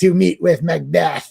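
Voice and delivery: put-on super old, haggy old woman voice. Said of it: "a super old haggy voice".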